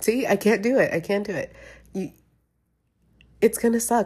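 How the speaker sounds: speaking through tears. Speaker imagining the mirror without those little ears, crying. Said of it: "I'm already crying".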